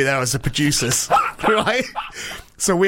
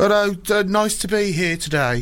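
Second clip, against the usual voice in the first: put-on slow, high, drawn-out Brummie accent; 5 semitones higher than usual. Describing a character from a show, Brummie accent. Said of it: "He speaks with a Brummie accent. He goes".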